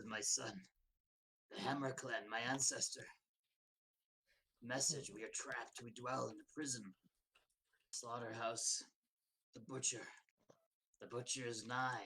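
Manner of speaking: low hoarse skeleton voice, mumbling. The narrator voices a dwarf skeleton's message in a low hoarse skeleton voice. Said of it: "in a low voice, in a hoarse".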